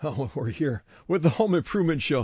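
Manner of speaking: winded, breathless. Radio host opening the show just after running upstairs, out of breath. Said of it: "A little out of breath".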